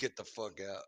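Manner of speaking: imitated Bronx accent. Playing a woman from the Bronx who taps you on the cheek, Bronx accent. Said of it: "She's from the Bronx".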